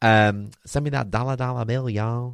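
very bad put-on country Texas accent. Repeating a line in an american voice: put-on country texas accent. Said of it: "A bit of a country Texas accent there".

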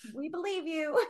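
mock gullible agreeing tone, high and soft.

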